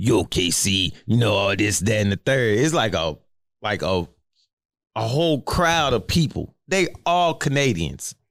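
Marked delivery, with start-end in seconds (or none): 0.0-2.6 put-on raspy voice, lower pitched. Retelling a bachelor party story, quoting a man: imitating Kenny's raspy voice. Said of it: "got a real raspy voice".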